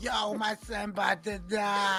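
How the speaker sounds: play-acted, panicking, freaked-out man's voice, drawn out. Imitating a father about his son: imitating a panicking dad. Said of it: "your dad is bugging out".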